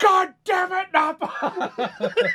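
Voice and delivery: loud, very high, very slow, drawn-out scream. Imagining the reaction to a ghost prank: Vegeta screaming. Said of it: "And just listen to him scream".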